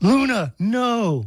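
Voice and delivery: put-on, high-pitched shouted yell. Speaker retells hearing someone yell at the dog in the backyard, retelling a yell. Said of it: "I hear Veronica yell".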